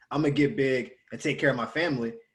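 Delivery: ordinary delivery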